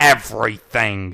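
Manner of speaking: severe, stern voice. He confronts Trixie after she nervously asks what they need to discuss; stern tone. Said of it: "he stated in a stern tone".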